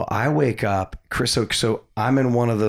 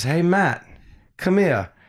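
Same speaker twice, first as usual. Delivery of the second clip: put-on pitched-up British-accented voice; 9 semitones higher than usual. Recalling a woman on the dock calling Matt over: British accent. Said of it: "she had a British accent".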